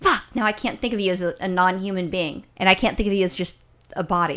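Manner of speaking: ordinary talk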